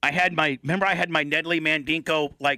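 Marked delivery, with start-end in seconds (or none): none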